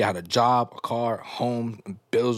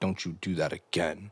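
mock-serious tone, much lower, quieter; 6 semitones lower, 8 dB quieter than usual. Retelling what he said in the moment, imitating him getting all serious. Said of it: "he immediately got all serious and was like".

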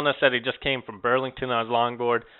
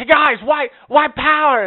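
very loud, high-pitched yell; 8 dB louder than usual. Retelling a guy who kept yelling after them, imitating a man yelling. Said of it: "he's like yelling it".

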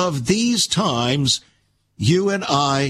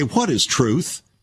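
put-on sarcastic delivery. Quoting someone's question aloud, imitating a sarcastic tone. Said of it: "in a sarcastic way".

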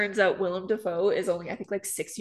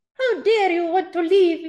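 terrible high-pitched put-on British old lady accent; 10 semitones higher, 8 dB louder than usual. Picturing the Queen speaking: bad high-pitched old lady accent. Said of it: "It's not even a good accent".

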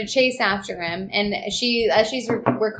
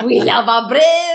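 mock German accent, louder; 3 semitones higher, 7 dB louder than usual. Joking that someone always sounds german, sliding into a german accent. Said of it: "Slides into a German accent".

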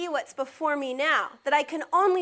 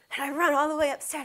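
plain

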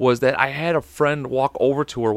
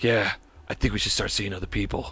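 fake cool-guy voice, lower and quieter; 5 semitones lower, 6 dB quieter than usual. Retelling a phone call just before going back to school: imitating a cool guy voice. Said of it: "this cool guy voice".

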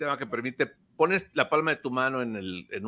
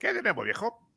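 failed, pitched-up, higher cartoon rabbit voice; 5 semitones higher, 3 dB quieter than usual. Trying to do a voice that won't come out: failed Bugs Bunny voice. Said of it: "no me sale la voz de Bugs Bunny".

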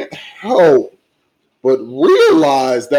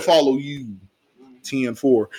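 ordinary talk

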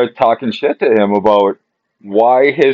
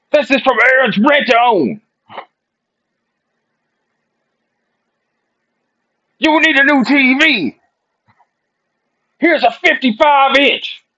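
put-on yelling shout, much higher. Describing a rent-to-own ad where mr. t yells at a man on a couch, imitating mr. t yelling. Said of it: "And he's yelling".

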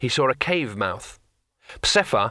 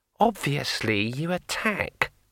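scornful, contemptuous tone; 3 dB quieter than usual. Answering a whispered request for suggestions, a character replies scornfully. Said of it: "said Kring scornfully".

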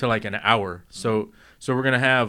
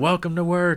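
high, loud yelled voice; 6 semitones higher than usual. Retelling how the sales manager opens the daily meeting, retelling a yell. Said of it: "she yells out".

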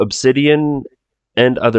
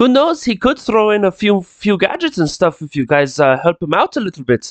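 very terrible put-on Irish accent; 9 semitones higher than usual. Answering the players at a tabletop game, in a very terrible irish accent. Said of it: "I'm doing a very terrible Irish accent".

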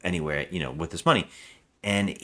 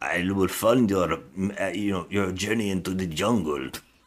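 put-on villain voice with Romanian accent. Retelling a movie scene where a stranger offers funding: imitating Tim Curry. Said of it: "he says it like this".

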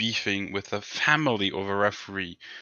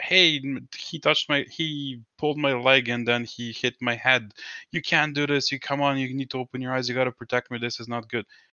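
put-on aggrieved, protesting yelling; 4 semitones higher than usual. Imitating a player yelling at referees: imitating Draymond Green yelling at referees. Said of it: "That's how he screams at referees".

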